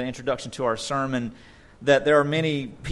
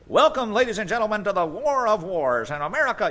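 high, 1940s-style newsreel announcer voice; 7 semitones higher than usual. Describing WWII-era pre-movie reels, the speaker imitates their narrator: 1940s newsreel announcer voice. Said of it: "You know that voice".

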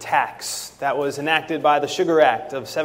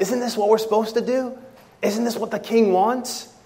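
acted quiet, hushed whisper, much higher; 6 semitones higher than usual. Speaker narrating a scene to the listener, voicing the friend's quiet whisper. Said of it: "quietly whispers to you".

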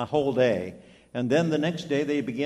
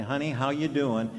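imitated whispering voice. Retelling what was said into a patient's ear after the ventilator came off: imitating a whisper. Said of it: "they whisper in her ear and say".

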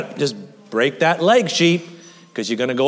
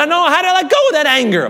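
voice breaking and cracking, pitched up; 11 semitones higher, 4 dB louder than usual. Speaker urging listeners to ask god for help, voice cracking. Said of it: "My voice cracked".

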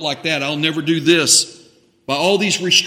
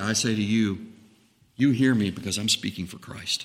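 hushed, much quieter, low and deeply humble; 7 semitones lower, 8 dB quieter than usual. Addressing the listeners directly, in a much quieter, deeply humble voice. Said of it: "with a much quieter voice".

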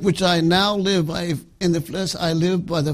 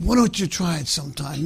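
mocking, needling, dry sarcastic tone. Preaching to a congregation about prayer: sarcastic. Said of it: "Now I'm being sarcastic".

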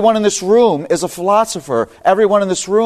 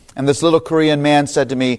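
usual speaking voice

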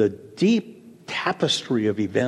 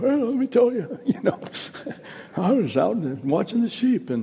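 put-on very high, cracking elderly voice; 10 semitones higher than usual. Imitating someone grown old telling their story, in a put-on cracking voice. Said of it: "the voice cracking and all that kind of stuff".

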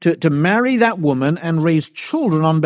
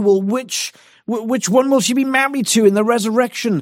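sneering, contemptuous, mocking tone dripping with scorn; 6 semitones higher than usual. Speaker acting out Christ's questioners laughing under their breath: imitating mocking contempt. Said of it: "dripping with contempt and mockery".

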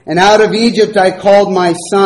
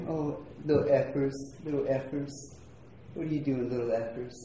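put-on soft, breathy, half-whispered baby talk; 4 semitones lower, 21 dB quieter than usual. Showing how the family talks to Effie, always the baby, in baby talk. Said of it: "this little baby talk we do".

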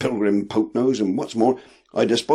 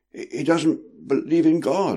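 quavering, shaken, trembling, high and slow; 5 semitones higher than usual. A narrator reads a character's line during a quarrel, trembling voice. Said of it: "said Justice in a trembling voice".

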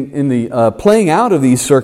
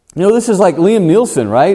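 ordinary talk

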